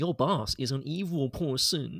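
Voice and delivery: put-on very slow small-child voice. Talking about the accent in Venom, imitate Tom Hardy sounding five years old. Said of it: "he sounds like he's five years old".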